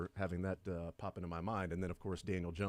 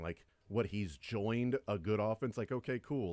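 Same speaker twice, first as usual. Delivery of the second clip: usual speaking voice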